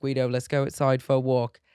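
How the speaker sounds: loud put-on British accent. Showing how the speaker talks to the dog when alone, British accent. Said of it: "I always talk to like the dog in a British accent".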